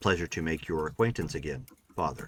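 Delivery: machine-like, synthetic, robotic voice. The narrator voices a message coming through to close the evening, in a robotic voice. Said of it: "coming through in a robotic voice".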